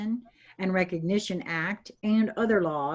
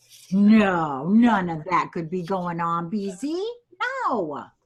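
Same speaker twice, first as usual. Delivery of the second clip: heavy, loud sarcasm with a drawn-out "no"; 6 dB louder than usual. Finishing a string of rhetorical questions to the other speakers: sarcastic. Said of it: "I put my sarcastic panties on".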